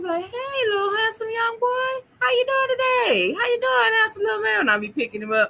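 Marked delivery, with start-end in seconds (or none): 0.2-4.6 very high, calling-out voice. Retelling picking up a son from school, acting like a stranger driving by. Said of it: "I be acting like I'm riding by".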